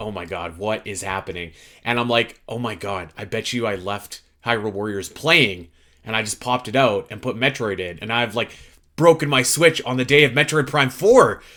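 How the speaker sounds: ordinary talk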